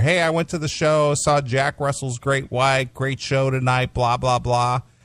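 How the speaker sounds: ordinary delivery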